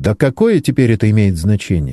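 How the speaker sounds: plain reading voice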